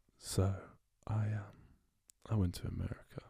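soft, gentle, soothing voice. Speaking softly after being told a soft voice is soothing: speaking softly. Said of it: "That's like A S M R to my ears".

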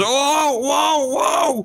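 panicked cry of pain. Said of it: "and he goes".

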